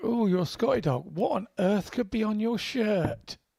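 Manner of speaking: dry, sarcastic, pretend-curious faux wonder.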